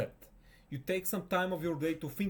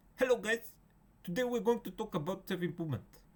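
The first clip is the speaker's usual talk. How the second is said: put-on Indian accent, pitched higher; 5 semitones higher than usual. Imagining a YouTuber greeting his channel's viewers, done in an Indian accent. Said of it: "if he was with his Indian voice".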